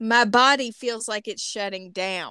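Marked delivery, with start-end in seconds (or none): none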